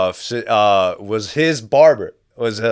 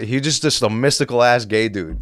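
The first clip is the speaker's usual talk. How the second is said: plain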